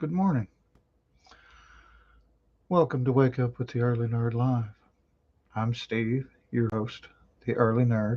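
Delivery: speaking softly in a hushed voice. The host opening the early morning live show, talking quietly. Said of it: "I'm talking quietly".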